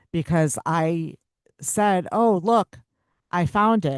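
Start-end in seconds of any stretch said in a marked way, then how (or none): 2.1-4.0 unconvincing, acted-out delivery, higher pitch. Retelling own past words about finding something: retelling own unconvincing line. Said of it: "Did you say it like that? Because that's so believable".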